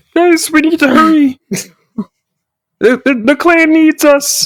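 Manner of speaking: squeaky, very high, cute put-on orc voice. A player tries out a new voice for an orc character, put-on orc character voice. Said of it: "can make this my voice".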